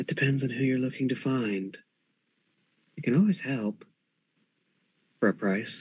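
soft, quiet, hushed whisper. A game narrator voices a hidden figure answering a seeker, in a quiet whisper. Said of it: "a quiet whisper sort of answers back".

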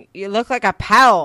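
very loud, thick, put-on Scottish brogue. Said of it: "the thickest Scottish bro-, uh, brogue".

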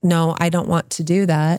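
ordinary talk

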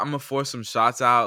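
ordinary talk

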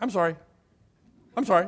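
high, mechanical, parrot-like rote repetition. Imitating a child caught doing something: parrot-like rote apology. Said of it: "little parrot".

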